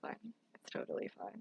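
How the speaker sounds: very soft, reassuring whisper.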